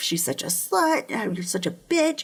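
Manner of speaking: mild, half-yelled, ranting voice. Retelling a photographer yelling at her on a red carpet: imitating someone yelling. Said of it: "He's yelling her, at her".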